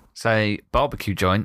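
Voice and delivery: ordinary talk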